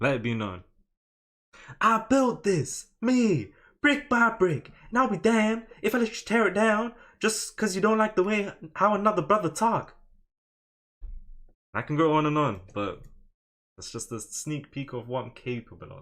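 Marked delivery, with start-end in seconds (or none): 1.8-9.9 put-on American accent, very high and raised pitch. Speaker shows off an accent they say they do well: american accent. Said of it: "I can do an American accent very well".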